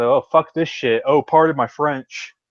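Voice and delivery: ordinary talk, nothing marked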